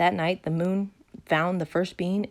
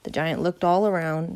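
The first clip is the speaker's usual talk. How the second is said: plain reading voice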